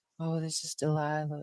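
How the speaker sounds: gentle, caring, super soft, high hush, radio tone. Describing a radio host heard on drives home: Delilah super soft voice. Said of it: "super soft voice".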